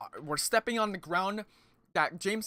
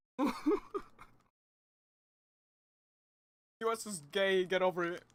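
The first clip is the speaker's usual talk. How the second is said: voice breaking, cracking hard on the words. Joking with a co-speaker, with voice cracking. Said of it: "my voice cracked so hard".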